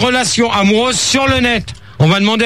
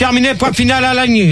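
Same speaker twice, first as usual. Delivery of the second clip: ordinary delivery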